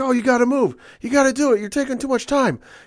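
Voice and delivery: play-acted, very high-pitched screeching. Retelling how the announcers urged a wrestler on: imitating someone screaming. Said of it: "screaming at her like".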